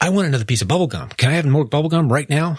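put-on demanding child voice. Acting out little Johnny's request to the adults: imitating a demanding child. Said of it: "little Johnny's got something he has to say".

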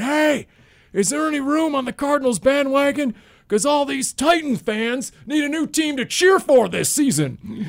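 booming, very high-pitched bellowing holler. Retelling a Cardinals fan's taunt to Titans fans: imitating a big bellowing voice. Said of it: "with his big bellowing voice".

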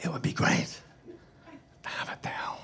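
hushed, breathy whisper, close and under the breath. Retelling what he leaned in close to say, imitating someone whispering. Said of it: "And he whispers to me".

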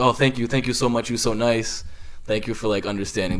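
ordinary talk

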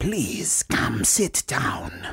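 put-on whispery, hushed witch doctor accent. After they leave the chamber, a voice speaks in a whispery witch doctor accent. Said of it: "It's the witch doctor accent".

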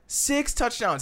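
stress on six.

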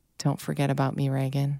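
hushed half-whisper under the breath. Retelling what someone half-whispered while holding a photo: imitating someone half-whispering. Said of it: "he was, like, whispering to himself".

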